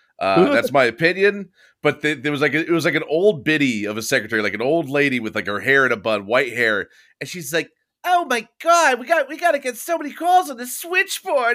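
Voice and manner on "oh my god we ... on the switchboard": very high, ditzy, airheaded voice. Describing an old-lady secretary character on a show, in a ditzy bimbo-y voice. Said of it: "playing like a ditzy, like bimbo-y voice character".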